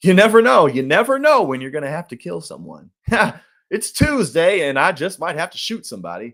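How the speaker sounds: tongue-in-cheek sarcasm. Joking about Americans before admitting the sarcasm: sarcastic tone. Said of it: "I'm being sarcastic".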